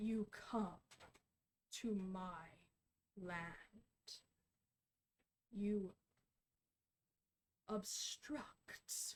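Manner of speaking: many voices layered, warped and melted into one. Telling a story, the speaker voices a mysterious voice: layered, warped, melted-together voice. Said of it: "a voice that's layered and warped and melted together".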